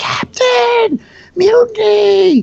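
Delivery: high, loud, drawn-out yell at full volume.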